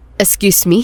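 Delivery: cold, icy tone. Reading a story aloud, a son answers his parents' demand: cold question. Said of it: "Malamig na tanong ni Martin".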